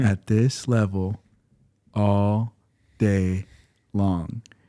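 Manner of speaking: mimicked slow, soft speech. Describing how a sweet girl always talked, imitating very slow, quiet talk. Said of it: "she would talk so slow and so quiet".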